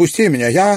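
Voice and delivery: furious outcry, very high-pitched, very loud and shrill. A woman, fighting off the man holding her, speaks to him; angry, struggling. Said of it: "она сердито отбивалась от него".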